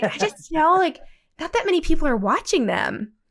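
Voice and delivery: high, condescending, patronizing talking-down voice. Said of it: "That condescending, uh, pa-, patronizing".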